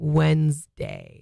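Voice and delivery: "Wednesday" sounded out deliberately. Speaker demonstrating how to pronounce a word in a chat, saying it slower. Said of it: "Say it slower".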